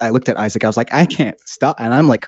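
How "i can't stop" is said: high, mock laughing and crying at once. Retelling telling Isaac about uncontrollable laughter, imitating own crying laughter. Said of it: "crying, laughing".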